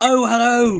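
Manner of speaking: put-on London accent, very high and loud. Imagining an interview with an actor's voice coach, London accent. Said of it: "like from like some three square block area in London".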